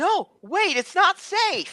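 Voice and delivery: very high, very slow, shrill, drawn-out shout. Voicing a companion calling after a runner: shouting a warning. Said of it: "she's shouting".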